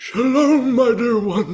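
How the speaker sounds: fake stage voice, pitched way up, loud. Saying shalom to her when she dislikes theatrics, theatrical put-on voice. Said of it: "that voice".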